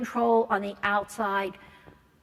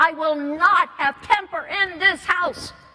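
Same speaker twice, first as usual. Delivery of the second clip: deliberate, loud, drawn-out high yell; 8 semitones higher, 6 dB louder than usual. Retelling what a teenager's parent screamed once: imitating someone screaming. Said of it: "scream at the top of his lungs".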